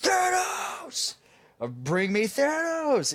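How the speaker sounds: acted, very high, slow, drawn-out swooping shout. Retelling the scene where Thor arrives on Earth: imitating Thor yelling. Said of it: "And he's just yelling".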